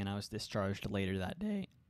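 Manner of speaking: cracking voice. Telling listeners about a recent experience; voice cracking. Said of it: "voice crack, sorry".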